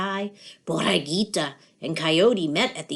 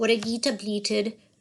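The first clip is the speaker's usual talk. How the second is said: ordinary delivery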